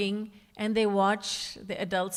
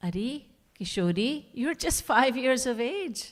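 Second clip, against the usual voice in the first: put-on patient woman's voice, higher pitch; 3 semitones higher than usual. Speaker retells what Kirti Maya told her as a five-year-old, imitating Kirti Maya, very patient. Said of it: "she says very patiently".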